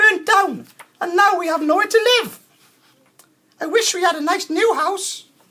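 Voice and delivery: shrill, very high, loud, squeaky mouse voice. Narrator reads the Mother Mouse's reply to George, squeaky mouse voice. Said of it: "squeaked the Mother Mouse".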